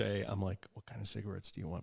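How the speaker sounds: put-on hushed whisper. Retelling a quiet question at a store counter: imitating own hushed whisper. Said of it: "sotto voce".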